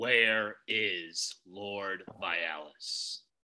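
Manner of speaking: very low, very quiet, slow growl. Role-playing a character demanding where someone is, in low growl voice. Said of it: "I'm gonna do the low growl voice".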